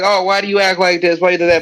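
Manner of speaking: usual speaking voice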